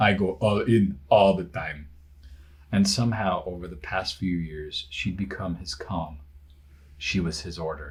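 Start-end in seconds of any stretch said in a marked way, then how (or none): 0.0-1.9 louder mock Russian accent. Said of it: "read everything in a Russian accent".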